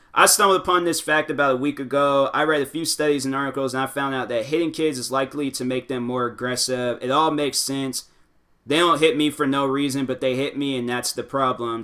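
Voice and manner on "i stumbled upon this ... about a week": plain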